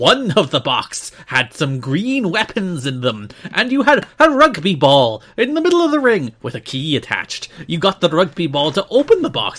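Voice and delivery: fake Irish accent drifting Scottish. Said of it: "I'm veered more to Scottish here".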